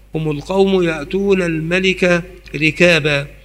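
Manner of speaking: normal talking voice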